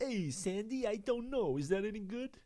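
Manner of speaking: very high put-on film star voice, fully in character. Asked to do an impression, doing John Travolta: John Travolta impression. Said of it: "Can you do a John Travolta?".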